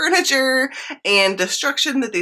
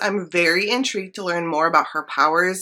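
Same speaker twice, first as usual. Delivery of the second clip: plain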